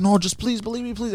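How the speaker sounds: put-on very high pleading, begging voice. Retelling a phone call with a friend, imitating a friend begging. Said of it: "He's like begging me to believe".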